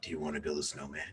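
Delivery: very low, very quiet, hushed sinister murmur. Describing walking up to a random person with a question; Jigsaw voice. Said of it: "Not in the jigsaw voice".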